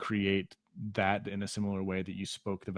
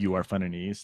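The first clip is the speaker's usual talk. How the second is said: ordinary talk, nothing marked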